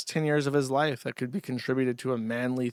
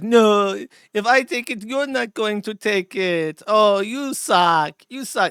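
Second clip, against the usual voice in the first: very loud, high, slow, drawn-out cartoonish voice; 8 semitones higher, 9 dB louder than usual. Acting out a line from a Family Guy skit: Eva Braun voice. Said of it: "And Eva Braun's like".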